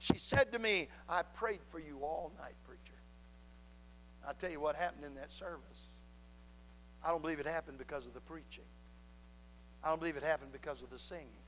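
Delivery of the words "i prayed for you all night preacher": frail, weak, feeble little voice, soft. Preacher retelling what a woman told him, imitating a little feeble voice. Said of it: "in that little feeble voice".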